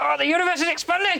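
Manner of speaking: very high, desperate voice. Performing the voice another speaker asks for: voice like needing a piss. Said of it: "What's the voice when it sounds like you need a piss?".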